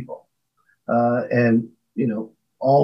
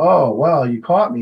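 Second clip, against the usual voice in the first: normal talking voice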